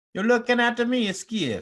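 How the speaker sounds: very high, loud, terrible Italian accent. Switching between accents while repeating a line, in a bad italian accent. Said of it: "Now I've gone to Italian".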